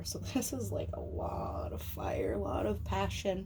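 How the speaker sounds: slow, breathy words stretched out by a yawn. Reading tarot cards, yawning while talking. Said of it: "I'm sorry. I am yawning".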